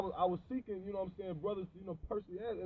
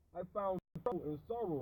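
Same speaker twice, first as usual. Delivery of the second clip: plain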